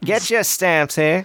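put-on high-pitched, old-timey Northeastern accent. Calling out to sell postage stamps at Costco, in an early 1900s Northeastern accent. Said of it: "that early 1900s Northeastern accent".

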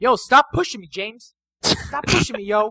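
put-on New Jersey accent. Joking back at a co-host who told them to continue: new jersey accent. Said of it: "His jersey's coming out".

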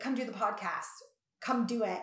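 bossy, insistent, firm, authoritative tone. Retelling what the speaker normally tells the co-host: imitating own authoritative tone. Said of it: "in a very authoritative way".

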